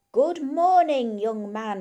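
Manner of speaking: deliberate, booming, very slow, loud, every word clear. Reading a story, the farmer greets Windy while shaking his hand, very slow and clear. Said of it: "he says very slowly and clearly".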